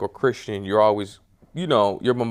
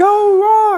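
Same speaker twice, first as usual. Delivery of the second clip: put-on very high, shrill, top-of-the-lungs cheering child scream; 10 dB louder than usual. Retelling cheering at wrestling as a little kid: imitating own childhood screaming. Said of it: "And I'm screaming".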